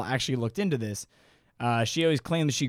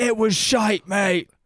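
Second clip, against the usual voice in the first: put-on Australian accent, raised voice, blunt; 7 semitones higher, 6 dB louder than usual. Imagining how australian listeners will react, the speaker answers in an australian accent. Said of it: "They'll be like".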